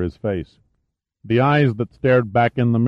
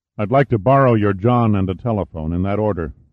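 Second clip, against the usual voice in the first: ordinary delivery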